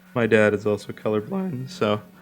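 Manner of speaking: voice cracking. Chatting while drawing: voice crack. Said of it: "that was a voice crack".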